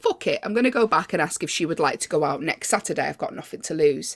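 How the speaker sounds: ordinary delivery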